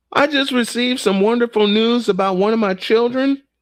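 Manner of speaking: choked up, close to tears, pitched high. Sharing personal news, the speaker is about to cry. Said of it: "I'm gonna cry".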